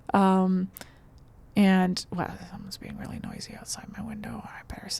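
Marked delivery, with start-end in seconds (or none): 2.1-5.0 hushed, very quiet whisper. Noticing someone noisy outside the window, speaking quietly. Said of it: "I'm saying that quietly".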